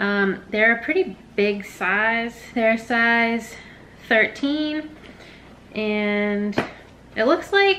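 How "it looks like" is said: voice suddenly shooting up high in pitch. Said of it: "I don't know why my voice just went up like that".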